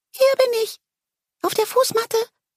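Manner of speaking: high, small, piping little voice. A narrator reads a talking plant's line from the doormat, high-pitched voice. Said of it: "als eine hohe Stimme mich aufhielt".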